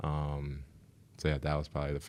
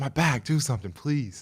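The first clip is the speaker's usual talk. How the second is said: mock, very high, desperate, pained screaming cry; 10 semitones higher, 3 dB louder than usual. Recalling waking up before ending up in the emergency room, retelling screaming in pain. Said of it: "I was just screaming like".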